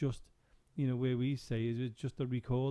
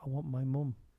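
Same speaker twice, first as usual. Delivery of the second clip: put-on, imitated child's voice. Retelling a voice heard alone in the children's area: imitating a child's voice. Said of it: "it was like a child's voice".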